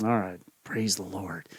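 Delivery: embarrassed, sheepish little hushed half-whisper. Telling a story about a rider whose horse won't move: half-whispering. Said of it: "he kind of whispers".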